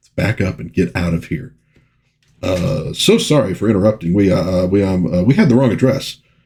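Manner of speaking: ordinary talk, nothing marked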